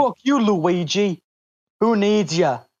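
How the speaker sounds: male New Jersey accent. Joining another speaker's bit, doing Mario as a New Jersey guy. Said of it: "Guy from New Jersey".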